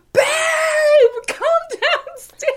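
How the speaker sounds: very high shouted scream, "babe" stretched long. Retelling calling someone downstairs after seeing a mouse: imitating own past screaming. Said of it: "arms flailing, screaming".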